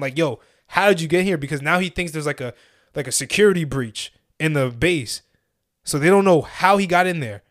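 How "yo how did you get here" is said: mock yelling, imitated shout. Telling a story, playing the lieutenant yelling at a farmer found on base, retelling a yell. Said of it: "the lieutenant is literally yelling at him".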